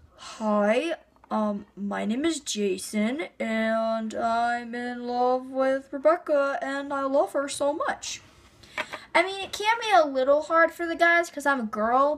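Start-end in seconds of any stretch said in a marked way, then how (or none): 0.2-8.2 very slow, faked low manly voice. A girl showing how she does voices for guys: put-on deep guy voice. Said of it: "acting voices with deep voices ... get into the mood of a guy. Like, seriously, like this".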